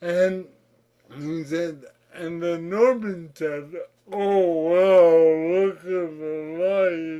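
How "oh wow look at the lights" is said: loud, slow, over-articulated, with drawn-out 'the'. Retelling a friend's story in which the friend imitated the speaker: retelling a friend imitating him. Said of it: "he imitated my voice".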